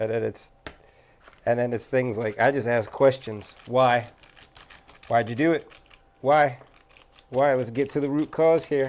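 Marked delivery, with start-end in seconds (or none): 3.7-8.9 probing, stern, fatherly tone. Retelling how he questions the kids when mad: imitating his own deep dad voice. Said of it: "deep, deep dad voice".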